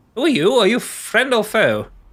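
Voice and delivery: very high, swooping, pompous little man voice. Voicing a tiny man strutting out to the arrivals: pompous tiny man's voice. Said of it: "full of pomp and circumstance of himself".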